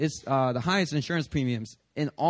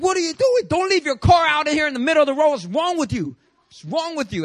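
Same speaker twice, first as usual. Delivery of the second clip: shrill, very high, loud yell; 13 semitones higher, 6 dB louder than usual. Retelling how a police officer yelled at him on the road: imitating a police officer yelling. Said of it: "starts yelling at me".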